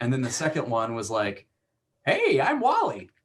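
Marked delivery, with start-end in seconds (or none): 2.0-3.0 put-on very high-pitched old man voice. Recalling a recording session, redoing the character's intro in a Wally old man voice. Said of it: "with a different old man voice".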